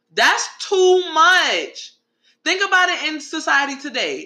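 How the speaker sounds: heated high-pitched yelling. Speaker addressing listeners mid-story: yelling. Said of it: "I'm yelling now because I'm tight".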